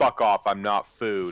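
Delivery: dry, flat, expressionless, dismissive deadpan. A player's character faces creatures sizing him up and answers one: deadpan. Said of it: "I look at him just deadpan and go".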